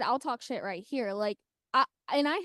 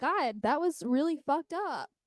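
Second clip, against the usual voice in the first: usual speaking voice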